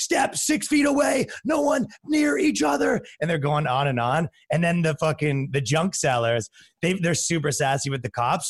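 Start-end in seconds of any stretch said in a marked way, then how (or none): 0.0-3.0 very high, drawn-out police megaphone voice. Retelling how the cops announced over megaphones: imitating a cop on a megaphone. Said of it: "cops show up with the megaphones".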